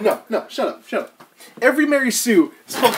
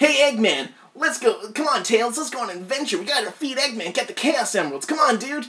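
straight cartoon hedgehog impression; 3 semitones higher, 4 dB quieter than usual. Showing off his two Sonic voices, now doing the actual Sonic voice. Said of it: "And then I have the actual Sonic voice".

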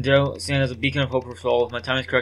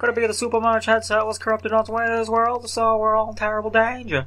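very high, invented, put-on cartoon rabbit voice; 11 semitones higher than usual. The speaker voices the rabbit wearing the headset in a put-on rabbit character voice. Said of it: "I don't know why I gave him this voice".

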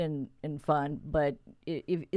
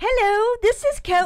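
very high, drawn-out, snarky put-on British voice; 9 dB louder than usual. Retelling answering a hotline call, mimicking the british caller back, smartass. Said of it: "mimicking him back, like, being a complete smartass".

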